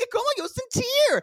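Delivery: put-on very high-pitched American Valley Girl accent. Retelling a fight outside a restaurant, imitating an American Valley Girl accent. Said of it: "such an American Valley Girl accent".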